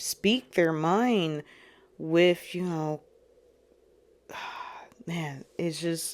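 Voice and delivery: choked-up voice heightened by emotion. Describing what people in brotherhoods will be able to do: getting emotional. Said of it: "getting a little emotional heightened".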